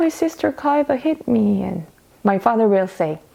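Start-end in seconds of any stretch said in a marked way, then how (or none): 0.0-1.6 play-acted, high, tearful crying, little-sister voice. Retelling a younger sister's complaint to their father: imitating younger sister crying.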